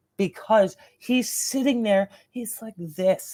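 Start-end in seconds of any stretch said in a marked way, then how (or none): none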